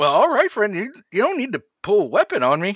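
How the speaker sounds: very high, grinning, smiling character voice. Game master voices a character facing a player holding a gun: smiling character voice.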